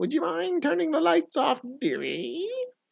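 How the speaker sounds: witchy, very high-pitched voice. Quoting a woman who asked them something, in a witch voice. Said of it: "She definitely sounded like a witch".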